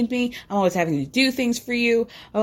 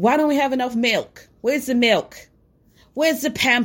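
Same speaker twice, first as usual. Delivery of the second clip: play-acted petty whiny nagging, faint British tinge. Retelling a husband's complaints about milk: imitating Michael whining, a little British. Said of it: "that was a little British".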